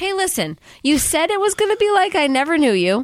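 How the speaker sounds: put-on angry accusing tone. Retelling Bella scolding the apparition of Edward: imitating Bella angry. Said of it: "mad at the apparition of Edward".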